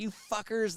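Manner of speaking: play-acted, very high, shrill screaming shriek. Retelling how a worker screamed at them: imitating a man screaming. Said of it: "the guy was screaming at us".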